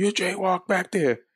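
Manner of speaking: mock cop yelling, pitched very high. Retelling being stopped by cops for jaywalking, imitating cops yelling. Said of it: "they were yelling".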